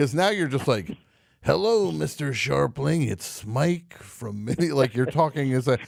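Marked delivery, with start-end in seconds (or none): 1.4-4.7 rough, creaky, raspy commercial announcer voice. Imitating a caller's slow greeting: Wilford Brimley oatmeal commercial voice. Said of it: "Wilford Brimley's doing an oatmeal commercial".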